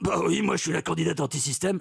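rough, throaty, rasping put-on voice from the throat. Mock interview about anti-system candidates, Marine Le Pen voice. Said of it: "Très belle imitation de Marine Le Pen. ... Et ça part de la gorge".

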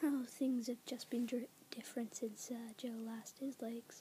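soft, whispered put-on voice.

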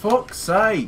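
put-on Yorkshire accent, very high and loud. Exclaiming while trying to remember a show to watch, in a Yorkshire accent. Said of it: "You got Yorkshire now?".

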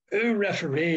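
put-on male shout. Retelling a man on the sideline shouting at the referee: imitating a man shouting. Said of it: "but he was shouting".

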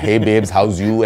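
casual, put-on West Delhi street accent. Retelling how the actor spoke on set, imitating Rocky's West Delhi accent. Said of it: "He's talking in that accent".

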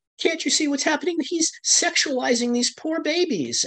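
mock crying, very high, sobbing through the words. Retelling what a crying protester said at a reading: imitating a crying protester. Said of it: "She's literally crying".

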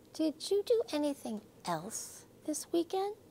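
tender, soft, gentle voice. The teacher asks a girl in front of the class, said gently. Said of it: "said Miss Hart gently".

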